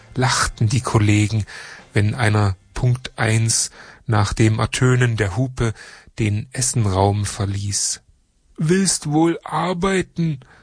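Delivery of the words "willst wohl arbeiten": high, scornful, taunting, mocking jeer. Coworkers jeer at a colleague who leaves the lunch room on time, mocking. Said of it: "höhnten sie".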